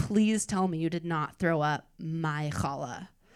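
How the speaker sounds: mock anxious, worried, upset, pleading voice. Retelling mom's reaction to hearing about bulimia: imitating a worried, upset mom. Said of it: "She's worried and upset".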